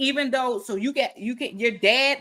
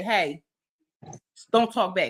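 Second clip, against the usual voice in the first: put-on tone without raised voice; 4 semitones lower than usual. Retelling how dad gets obeyed without raising his voice, retelling a command, not loud. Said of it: "he doesn't have to say it in a loud voice".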